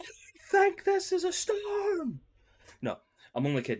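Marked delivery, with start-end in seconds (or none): 0.0-2.2 pretend yelling, higher and louder. Acting out players warning the group about a storm: mock shouting a warning. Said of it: "that are the ones that are gonna be shouting".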